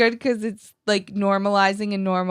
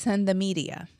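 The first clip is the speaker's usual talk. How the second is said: imitated Boston accent; 6 dB quieter than usual. Retelling what a caller said, imitating a Boston accent. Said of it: "in his accent".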